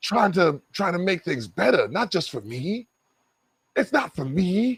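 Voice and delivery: put-on calm, even tone. Mocking a man who wants the community to acknowledge him, mock calm voice. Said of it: "calm voice".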